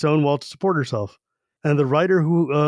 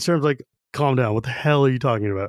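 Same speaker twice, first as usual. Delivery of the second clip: normal talking voice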